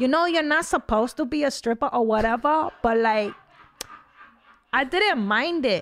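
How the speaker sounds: put-on high-pitched New York accent. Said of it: "That's such a good impression".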